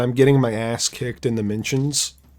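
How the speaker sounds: ordinary delivery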